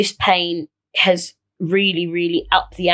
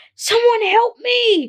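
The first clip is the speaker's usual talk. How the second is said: very high-pitched scream. Describing lying in pain in their flat, retelling a scream for help. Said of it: "I scream".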